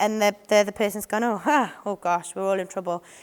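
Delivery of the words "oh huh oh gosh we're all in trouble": dry, sarcastic tone throughout. Retelling a sarcastic reply to a player's hopes: imitating a sarcastic remark. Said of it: "so sarcasm".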